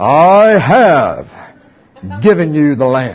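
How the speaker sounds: very slow, deep, booming voice from heaven. Retelling a biblical story, the speaker voices God from heaven: booming God voice. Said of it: "a voice booms out of heaven".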